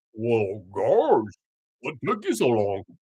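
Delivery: dopey, stupid-sounding cartoon dog voice, pitch swinging. Speaker acts out the devil greeting new arrivals, in a Goofy voice. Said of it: "sounding kind of stupid like Goofy".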